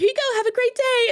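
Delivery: very high-pitched voice, pushed way up. Retelling a worker handing over a drink through the door, in a really high-pitched voice. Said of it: "In this really high pitched voice".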